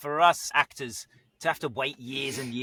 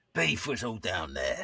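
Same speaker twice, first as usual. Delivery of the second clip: very deep, dropped-down character voice; 5 semitones lower, 4 dB quieter than usual. A voice actor demonstrates a voice made up for a commercial, very deep. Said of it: "Beef was very deep, like that".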